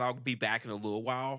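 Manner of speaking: ordinary delivery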